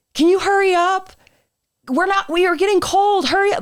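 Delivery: very high, impatient yelling. Recounting people yelling at the speaker to hurry up, retelling impatient yelling. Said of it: "they're yelling at me".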